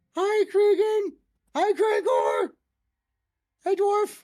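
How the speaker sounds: tiny, little, very high-pitched voice. Voicing the character who turned into a nut, speaking from inside it, little small voice. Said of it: "you hear this little small voice from inside the nut".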